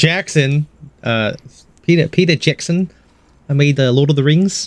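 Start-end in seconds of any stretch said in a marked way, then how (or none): 1.8-4.7 put-on voice of a Maori man. Doing Peter Jackson, but making him sound like Taika Waititi. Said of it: "I'm making him sound like".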